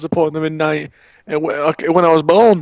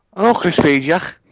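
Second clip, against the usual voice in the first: put-on Scouse Liverpool accent. Answering the other speaker's question: put-on scouse accent. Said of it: "changed your accent to a bit of a Scouse one there".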